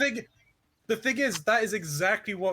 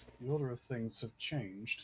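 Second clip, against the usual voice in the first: put-on ominous voice, lower and quieter; 7 semitones lower, 11 dB quieter than usual. Telling the others that something has changed: mock ominous tone. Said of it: "You said that so ominously".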